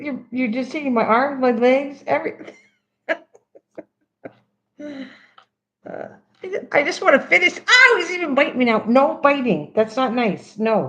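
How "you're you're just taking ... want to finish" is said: giggly, halting talk, laughing through the words. Talking to a pet that keeps grabbing at them, laughing while talking. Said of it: "I can't stop laughing".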